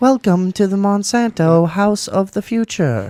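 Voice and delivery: computerized announcer voice. Imitating an evil corporation speaking: cold computerized woman voice. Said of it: "a cold computerized woman voice".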